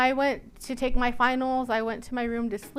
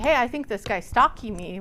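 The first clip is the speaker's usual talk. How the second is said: plain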